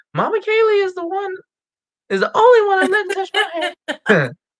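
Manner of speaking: put-on very high, sing-song, swooping little boy voice. Reading a customer review aloud, imitating the client's son quoted in it. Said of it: "hopefully that's a good impression".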